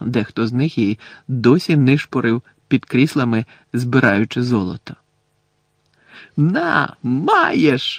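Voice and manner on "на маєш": bright, delighted, joyful burst of exclamation. Pressing a handful of gold coins into someone's palm: joyful yell. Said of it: "радісно заволав Рон".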